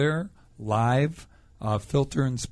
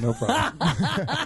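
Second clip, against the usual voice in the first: slow, drawn-out, laughing, amused. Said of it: "Tell 'em you're a hermaphrodite".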